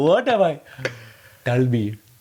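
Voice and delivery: awful, aggressive put-on Indian accent. Imitating how aggressive alcoholic fathers of India speak, in a mock-aggressive Indian accent. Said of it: "The aggressive alcoholic fathers of India speak like this".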